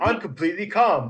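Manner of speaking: steady, calm, otherworldly magic voice. Insisting in character to the party that you are calm: booming magically amplified voice. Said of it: "using thaumaturgy to make my voice boom out".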